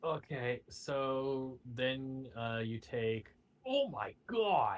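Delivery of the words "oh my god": high-pitched, shocked, alarmed outburst. Announcing a player's damage and reacting to the roll: alarmed exclamation. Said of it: "Why would you say it like that?".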